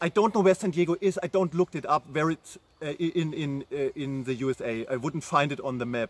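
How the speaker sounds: plain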